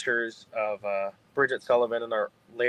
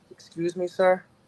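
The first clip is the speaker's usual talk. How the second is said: put-on Irish accent in a woman's voice, pitched up; 7 semitones higher than usual. Retelling a voice heard on a ghost recording: imitating an irish woman. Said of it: "on the E V P is an Irish woman".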